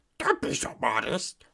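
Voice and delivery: heavy smoker's worn-out, raspy voice. Doing an impression of a man's voice, imitating a heavy smoker's voice. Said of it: "has he smoked like fifty packs of cigarettes".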